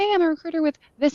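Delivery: very fast, high-pitched, rushed, rattled-off delivery. Retelling how recruiters calling on the phone introduced themselves, saying it very fast. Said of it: "they would say it so fast".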